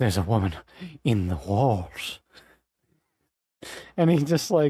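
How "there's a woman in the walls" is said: very deep, very low, unhinged deranged madman voice. Telling a friend about a show, speaker imitates the insane guy from Over the Garden Wall. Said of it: "insane guy who's in the third episode who's just like".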